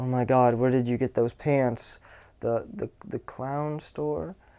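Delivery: hesitant, unconfident, weak little tease. Demonstrating a tease that comes off super weak, with weak, unconfident delivery. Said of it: "it comes off super weak".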